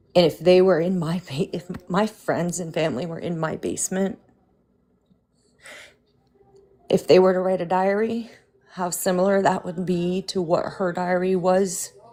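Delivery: emotional voice on the edge of crying. Speaking about people who gave family when family broke: emotional, close to tears. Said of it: "I'm gonna cry".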